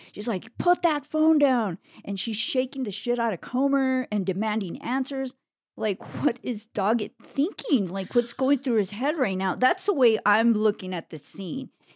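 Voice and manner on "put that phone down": play-acted loud, high-pitched yell. Recapping a scene where a woman yells at a man, retelling a yell. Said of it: "she's yelling at him".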